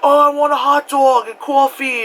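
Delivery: over-the-top, very high, exaggerated New York accent. Describing how visitors mimic New Yorkers, quoting them in an exaggerated New York accent. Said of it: "I don't go that hard with my accent".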